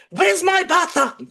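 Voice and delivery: shrill, very high, loud, hostile and aggressive. Retelling how someone answered the door to a delivery driver: imitating an aggressive demand. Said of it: "very aggressively saying".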